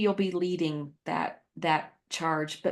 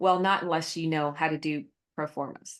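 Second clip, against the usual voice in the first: thick, heavy sarcasm; 3 semitones lower than usual. Retelling her answer to a volunteer offering help, retelling own sarcastic reply. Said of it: "very sarcastically".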